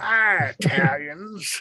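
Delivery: put-on high-pitched old-prospector voice. Imitating how someone used to say a word, like an old prospector. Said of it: "saying it like an old prospector".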